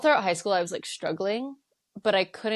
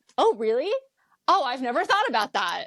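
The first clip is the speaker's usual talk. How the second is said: swooping, dripping sarcasm with fake astonishment; 5 semitones higher than usual. Retelling own reply to a psychiatrist's suggestion: imitating own sarcastic reply. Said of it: "Insert sarcastic tone here".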